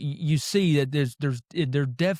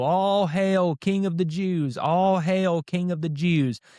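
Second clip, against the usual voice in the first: fake, taunting, scornful, mocking delivery; 4 semitones higher than usual. Retelling how kneeling soldiers mocked Jesus: imitating soldiers mocking. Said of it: "very mockingly, to make fun of him".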